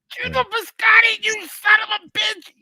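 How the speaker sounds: put-on yelling comedian voice. Doing an impression for the others after being told to yell: Kevin Brennan impression, yelling. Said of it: "Everybody can do a Kevin Brennan".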